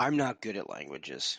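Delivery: low, sarcastic aside.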